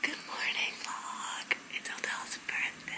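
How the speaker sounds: hushed, very quiet, secretive whisper. Vlogger greeting viewers in the morning while someone showers, whispering. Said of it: "I have to whisper because he's in the shower".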